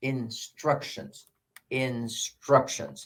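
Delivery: instructions said slowly, soft stress on STRUC. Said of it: "On which syllable is the stress".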